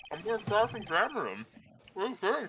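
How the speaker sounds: speaking with a full mouth while chewing. Repeating a plan to cross-examine someone, eating with mouth full. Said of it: "you're eating with your mouth full".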